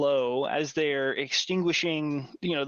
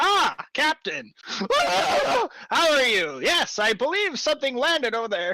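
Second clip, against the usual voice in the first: very high, neutral, impassive, unbothered, slow delivery; 11 semitones higher, 5 dB louder than usual. Retelling how the kobold greets a panicking captain: neutral, impassive kobold voice. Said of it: "neutrally and impassively Carlos would have delivered".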